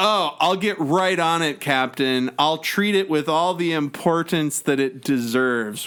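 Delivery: ordinary talk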